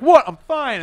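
very high, loud, insistent, overpowering delivery. Retelling how a friend answered after being shushed, retelling a friend's louder reply. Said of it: "saying it louder than he was saying the shit".

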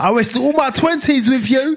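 play-acted very high, bitter, resentful voice. Acting out a dumped partner complaining, imitating a resentful ex. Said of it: "you start getting resentful".

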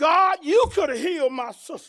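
put-on angry voice. Retelling what someone said to God: imitating an angry voice. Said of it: "in an angry type voice".

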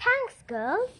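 said through a laugh, very high, loud. A character thanks two girls after recovering her football, laughing. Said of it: "Francesca laughed".

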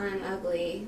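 ordinary delivery

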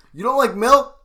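over-exaggerated yell, very loud and very high. Reacting to a friend hating milk: classic dad yell. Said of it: "You do the classic dad yell".

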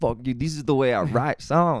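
put-on sudden, odd, high-pitched South African accent. Acting out what a band might answer, in a South African accent. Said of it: "I was South African for a second".

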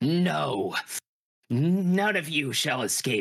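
throaty, guttural, menacing monster voice. Narrator voicing the monster as it is driven from the world, deep guttural monster voice. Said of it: "You hear it in its deep, guttural voice".

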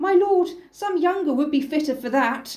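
put-on aged, elderly character voice. Reading a play aloud with different voices, the speaker gives the chorus an elderly voice. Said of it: "I'm going to have to do my different voices again".

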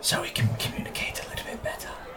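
frightening whispered voice. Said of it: "There's the scary voice".

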